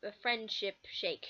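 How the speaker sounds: ordinary talk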